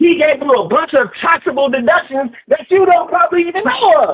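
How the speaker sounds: high-pitched angry rant. Arguing about Donald Trump with someone who asks him to stop, screaming. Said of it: "you are going to have to stop screaming".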